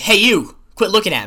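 put-on Brooklyn accent. Retelling calling someone out across lunch tables: imitating own put-on Brooklyn accent. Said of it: "a Brooklyn accent".

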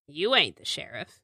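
voice of someone freshly roused from sleep. Voicing an inmate just woken in a jail cell: just-woken jailed inmate voice. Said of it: "Kind of wakes up, looks at you and goes".

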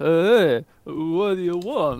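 put-on drunk man's slurred voice. A player asks for a drunk man, and the narrator voices him: drunk man voice. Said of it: "The drunk man says".

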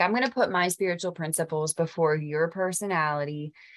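plain

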